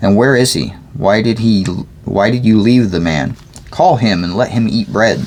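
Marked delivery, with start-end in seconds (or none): none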